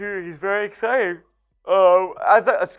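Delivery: speaking through a yawn. A Royals fan talking about Bobby Witt Junior, yawning while talking. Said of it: "excuse me for yawning".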